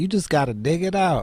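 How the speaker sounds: put-on high-pitched elderly woman's voice.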